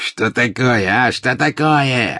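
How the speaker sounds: very slow, high, drawn-out furious yell. A suddenly enraged Death Eater turns on Dumby, angry shout. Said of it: "закричал обозлившийся вдруг пожиратель смерти".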